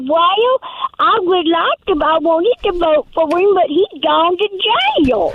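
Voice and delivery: high-pitched rural country-folk speech. Imitating voters who would not vote for him: imitating a country voice. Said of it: "That's my country voice".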